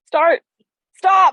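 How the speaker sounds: very high, loud shouted yell. Retelling being directed through an open car window: imitating someone yelling. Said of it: "you're yelling at me".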